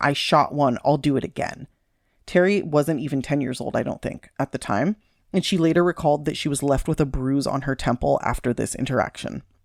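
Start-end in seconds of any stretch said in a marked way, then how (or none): 0.0-1.7 mock-menacing, threatening tone, slower. Retelling how she threatened to kill young Terry, the speaker is retelling a menacing threat. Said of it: "threatening to kill her by saying".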